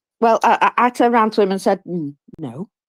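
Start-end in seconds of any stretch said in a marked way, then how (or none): 1.9-2.6 very quiet, barely audible, hushed voice. Retelling turning to him to refuse: retelling saying it very quietly. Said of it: "very quietly".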